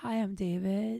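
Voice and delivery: calm, level, flat, hypnotic monotone drone. Retelling how a man greeted the speaker on arrival, imitating his flat monotone. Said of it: "Everything's very monotone".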